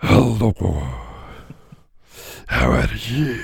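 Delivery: very low, very deep, intimidating monster-horse voice. Asked to imitate how the horse would sound greeting someone: intimidating horse voice. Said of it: "Can you do an imitation of what the horse would sound like?".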